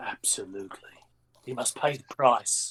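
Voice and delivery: dark, breathy, half-whispered voice. Nodding knowingly while speaking in character: darker voice. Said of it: "I'll put a darker voice on for him".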